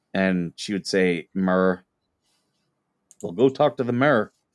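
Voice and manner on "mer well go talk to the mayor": put-on Pennsylvania Appalachian accent. Recalling how their grandmother used to say things, imitating grandmother's appalachian accent. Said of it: "Pennsylvania Appalachian accent".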